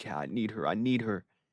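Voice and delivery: yearning, needy, hushed half-whisper close to the mic. Retelling how he half-whispered into the mic so she wouldn't hear: retelling a half-whisper into the mic. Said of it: "He's like whispering all up in the mic".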